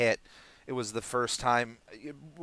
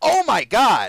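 very high, shrill, full-volume loud shout; 10 semitones higher, 12 dB louder than usual. Retelling watching a show in the bathroom, retelling a yell. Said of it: "and I just yelled like".

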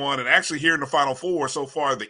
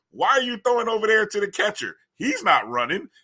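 words broken by laughter, pitched up; 8 semitones higher than usual. Retelling the coach's reaction to the pitcher's throw, mimicking laughing while talking. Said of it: "you can hear the laughter in Coach Kadar's voice".

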